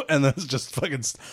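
ordinary talk, nothing marked

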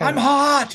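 mock, shrill, very high complaining yell. Retelling how a character yelled while transforming: imitating a yell. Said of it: "he literally yelled".

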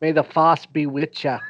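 attempted bad Boston accent. Quoting a Force line while admitting he can't do it, attempted Boston accent. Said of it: "I can't do a Boston, Boston accent".

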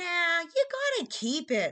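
eager, enthusiastic. A son joins his sister in teasing their mother, excited. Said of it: "Lars said excitedly".

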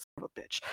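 soft, unvoiced muttering under the breath.

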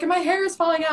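frantic, very loud, high-pitched stressed yelling. Retelling an iCarly episode scene: imitating a stressed iCarly character yelling. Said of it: "yelling about something".

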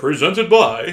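commercial announcer read voice. Showing off an ad read voice after mocking another guy's ad read. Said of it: "Here's my ad read voice".

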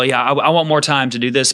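ordinary delivery

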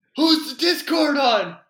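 very high, very loud shouting. Retelling a teammate's question mid-fight: imitating brother yelling. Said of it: "yelling at me".

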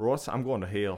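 put-on Southern accent. Retelling what the boss said after pulling him aside, in a southern accent. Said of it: "your name in a southern accent".

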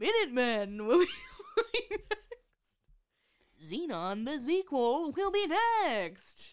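high, swooping, big promo announcer, stretched "next". Asked why they sounded like the Disney Channel announcer, Disney Channel announcer voice. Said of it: "that is who I sounded like".

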